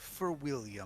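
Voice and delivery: sneering voice. Voicing a character addressing the party as they charge at her, sneering. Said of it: "in a in a sneering voice".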